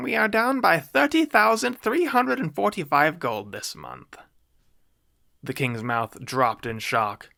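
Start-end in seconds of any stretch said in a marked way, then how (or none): 0.0-4.2 tiny, shrill, very high, squeaky small voice. Reading William the Wizard reporting to the king, use a shrill, small voice. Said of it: "A shrill, small voice came from".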